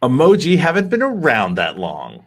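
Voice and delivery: full-on sassy voice with swooping pitch. Asked to give the answer in a sassy voice, the speaker says it sassily. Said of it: "if you want to say it in your sassy voice".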